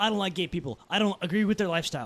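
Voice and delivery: ordinary talk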